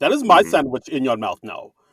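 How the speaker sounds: put-on Russian German accent. Retelling a sketch where a thief gaslights someone: Anna Delvey Russian German accent. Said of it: "she puts on the Russian German accent".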